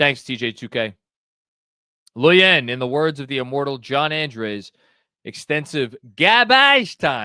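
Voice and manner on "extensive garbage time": put-on Boston accent. Quoting someone's famous words, done in a Boston accent. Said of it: "That was a Boston accent".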